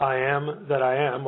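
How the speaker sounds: normal talking voice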